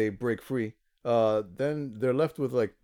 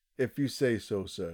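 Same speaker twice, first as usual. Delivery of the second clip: put-on deadpan delivery, quieter; 5 dB quieter than usual. Recapping a scene, the speaker quotes another man's reply, retelling a deadpan line. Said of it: "delivers his deadpan".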